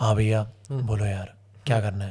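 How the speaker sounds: very deep, very low, soft, hushed voice. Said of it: "उसकी आवाज ऐसी होती है".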